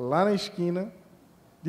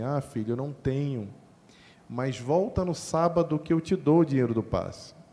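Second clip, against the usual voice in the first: smooth-talking, easygoing, calm, seductive fatherly voice. Retelling how the father answered the request for money: imitating father's calm, seductive voice. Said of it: "uma voz bem sedutora, calma".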